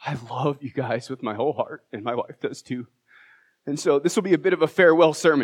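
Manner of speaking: speaking through tears. Speaker announcing a farewell sermon to the church, crying while speaking. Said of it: "And I'm already crying".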